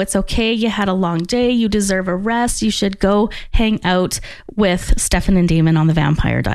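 ordinary talk, nothing marked

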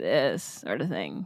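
creaky, crackling vocal fry in the throat. Describing a voice habit some people find annoying; vocal fry. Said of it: "we call it vocal fry going on".

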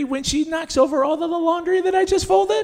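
passive-aggressive, high, rising, swooping voice. Answering whether the situation makes you feel happy: high voice. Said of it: "I can tell by your high voice".

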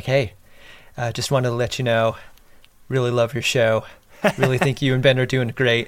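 discreet, quiet sotto voce murmur. Retelling how a fan quietly approached at a bar: imitating a quiet undertone. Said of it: "in a real sotto voce kind of way".

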